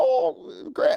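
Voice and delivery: put-on creaky old grandpa voice. Acting out the grandkids' question, the speaker slips into his grandpa voice. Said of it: "that's my grandpa voice".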